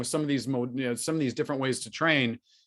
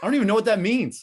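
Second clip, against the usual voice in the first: ordinary talk, nothing marked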